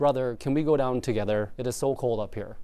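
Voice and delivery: ordinary talk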